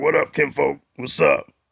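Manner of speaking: put-on rough-edged, creaky voice. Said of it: "he talks like this. He'd be like".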